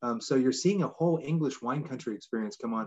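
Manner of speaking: ordinary delivery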